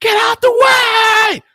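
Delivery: very high, very slow scream, stretched way out. Describing how exercisers act on the road: imitating people screaming. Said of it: "They start screaming".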